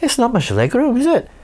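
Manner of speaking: put-on Welsh accent, voice very high. Retelling what a stranger said after sitting down next to them: welsh accent. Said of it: "your Welsh accent is better than mine".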